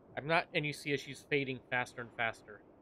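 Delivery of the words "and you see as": plain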